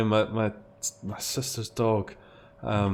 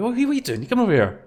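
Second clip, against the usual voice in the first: put-on, very high, calling shout; 13 semitones higher, 4 dB louder than usual. Retelling calling to the dog late at night: imitating a shout. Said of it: "we shouted at him".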